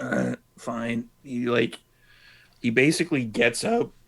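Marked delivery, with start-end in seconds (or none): 0.0-1.1 groggy, half-asleep, mumbling grumble. Voicing a sleeping character nudged awake: groggy just-woken mumble. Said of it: "The guy kinda stirs a little bit".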